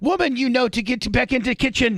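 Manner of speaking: put-on Egyptian accent, very high pitch. Retelling what a man tells a woman out of the kitchen, in a put-on Middle Eastern accent. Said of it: "like in his Egyptian and Middle Eastern voice".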